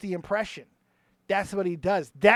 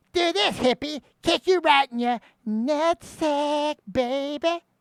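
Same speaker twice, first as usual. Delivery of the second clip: put-on, high-pitched cartoon character voice; 7 semitones higher, 4 dB louder than usual. Showing a voice learned by copying a mouth position: Cartman voice. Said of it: "that allowed me to mimic it".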